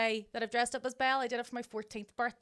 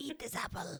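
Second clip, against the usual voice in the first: put-on evil witch voice, much quieter; 6 dB quieter than usual. Asked by friends to do an evil wicked witch impression, in that voice. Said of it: "an impression of the evil, wicked witch".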